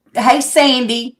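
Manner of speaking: usual speaking voice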